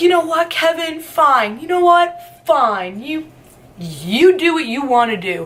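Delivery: high, sobbing, tearful bawling outburst. Retelling how she reacted after the speaker talked to Kevin, imitating someone bawling. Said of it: "She starts bawling".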